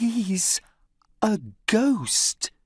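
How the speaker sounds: high-pitched private aside. Narrator reads Millie speaking to Tom: quiet voice. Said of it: "she says in a quiet voice".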